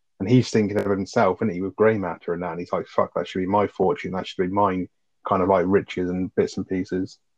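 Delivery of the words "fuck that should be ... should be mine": normal talking voice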